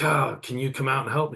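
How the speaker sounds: fed-up, weary, frustrated, tired pleading tone. Retelling asking the woman at the desk for help: retelling an angry, frustrated request. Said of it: "I'm angry, I'm frustrated, I'm tired".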